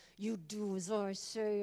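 put-on talking through teeth. A parent recalls giving orders to a competitive son, retelling talking through teeth. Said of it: "as I talk through my teeth".

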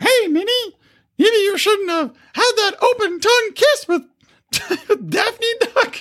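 pitch pushed way up, dragged out. Joking about Disney, attempting a bad Mickey Mouse impression. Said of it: "I can't do a Mickey Mouse".

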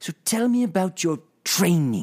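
heavy stress on training. Imitating a podcast host asking about training: imitating Teemu stressing training. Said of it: "this is how it sounds".

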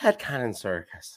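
Irish accent impression. Imitating how the listener's mom would name the podcast, imitating mom's irish accent. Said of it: "in her Irish accent".

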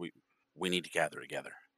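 muttering under the breath. Voicing a man who first says this to himself, muttered under his breath. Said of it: "he kind of says it under his breath at first".

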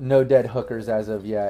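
plain

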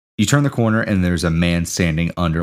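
ordinary delivery

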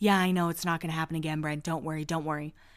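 earnest, solemn, low and quiet serious voice. Recapping a show, the speaker quotes Heidi answering Brent, mimicking Heidi's serious voice. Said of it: "she's talking in her serious voice".

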